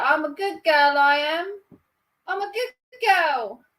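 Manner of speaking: high, slow, proper Cockney voice. Attempting the Eliza Doolittle line after recalling her: Eliza Doolittle Cockney voice. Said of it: "She's, like, proper Cockney".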